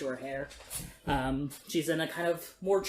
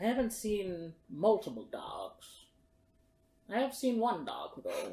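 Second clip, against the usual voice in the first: put-on ancient old woman voice with swooping pitch; 4 semitones higher than usual. An ancient woman living in the forest answers the players, ancient old woman voice.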